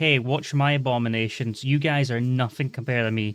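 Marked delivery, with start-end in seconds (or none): none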